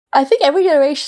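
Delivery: high words spoken through a yawn. A parent after a rough night with Phoebe, yawning while speaking. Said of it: "sorry, I'm yawning".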